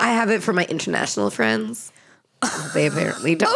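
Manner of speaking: audibly exasperated, eye-rolling delivery. Explaining why you keep WhatsApp for friends abroad, eye roll in the voice. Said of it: "You can hear the eye roll in my voice".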